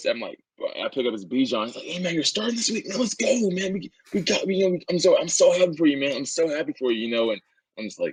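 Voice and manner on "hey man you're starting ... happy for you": put-on excited voice, pitched much higher. Retelling a phone call taken half asleep, imitating Bijan's excited voice. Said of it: "the most excited voice".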